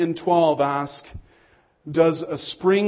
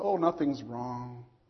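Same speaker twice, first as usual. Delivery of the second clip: fake sweet voice, very soft and low; 5 semitones lower, 10 dB quieter than usual. Showing how a parent answers the phone after yelling, in a fake sweet voice. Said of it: "we put on this nice, sweet voice".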